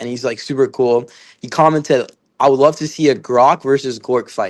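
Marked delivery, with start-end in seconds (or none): none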